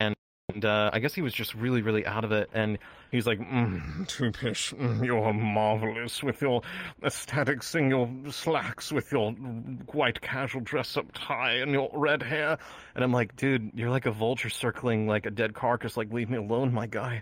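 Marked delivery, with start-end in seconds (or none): 3.4-12.6 spaced-out, dazed, slow drawl. Retelling what a man said on approaching the speaker and friends: imitating a man's deep voice. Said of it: "he had a really deep voice".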